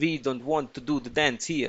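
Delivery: horrible, terrible put-on Russian accent. Voicing a character's lines in a horrible Russian accent. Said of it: "that's a horrible Russian accent".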